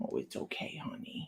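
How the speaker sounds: low, soothing, unvoiced whisper.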